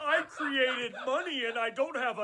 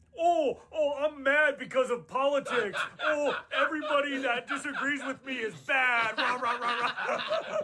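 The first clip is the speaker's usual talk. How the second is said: ordinary talk, nothing marked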